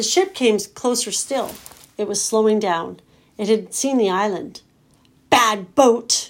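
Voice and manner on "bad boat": loud, shrieking, furious screaming outburst. Nim, seeing a ship approach the island, screaming at it. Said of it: "Nim screamed".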